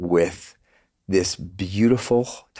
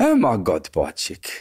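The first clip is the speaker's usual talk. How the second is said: put-on exclaimed in South African accent. Imitating what his friend used to say, in Dion's South African accent. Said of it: "I love doing his accent. He's South African".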